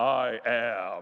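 very low, very deep divine voice. Telling a joke about a climber hanging on, the speaker gives God's booming voice. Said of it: "he hears this booming voice from the top".

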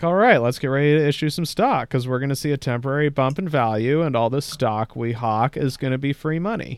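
usual speaking voice

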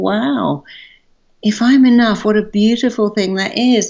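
tearful voice on the edge of tears. Speaking to listeners about being enough, getting tearful. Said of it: "I'm getting tearful at the very concept".

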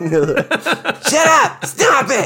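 yell pitched way up, swooping. Describing a character who yells at everybody over the intercom, imitating Hesh's high yelling voice. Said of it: "He's got a high voice, he's always yelling".

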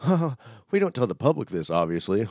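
talking through a chuckle. Retelling how a man in a video laughed while speaking: retelling a laugh while speaking. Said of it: "And then laughs like".

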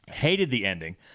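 ordinary talk

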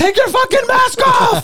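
put-on very high, shrill, raging Sicilian-accented shout. Imagining an italian guy yelling from his window: imitating an angry italian yelling. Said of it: "some Italian guy f-, from his window".

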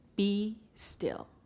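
firm, authoritative, commanding tone. Speaking to an audience, quoting what we are told, in a commanding voice. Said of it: "in a commanding voice".

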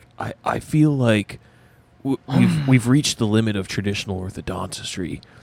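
put-on hippie voice. Retelling a movie scene, voicing the orthodontist: Keanu Reeves as hippie orthodontist. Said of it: "a hippie orthodontist".

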